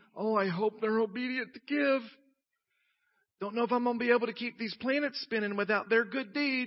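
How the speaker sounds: snide, sarcastic, mocking put-on fretting. Acting out an imagined quote from God: sarcastic God voice. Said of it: "That was sarcastic".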